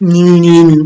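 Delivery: loud, mocking nee-nee jeering voice.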